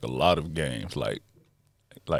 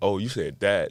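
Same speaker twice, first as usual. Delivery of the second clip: normal talking voice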